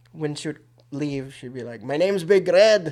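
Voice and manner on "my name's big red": loud, slow, put-on Scottish or Irish accent. Imitating her saying her nickname as she left: Scottish or Irish accent. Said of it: "Why that accent?".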